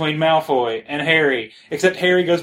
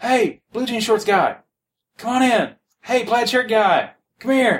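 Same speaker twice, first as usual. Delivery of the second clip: put-on, loud, hollered yell; 7 semitones higher than usual. Retelling walking past a convention table as Chad calls them in, imitating Chad yelling out. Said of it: "he actually yells out".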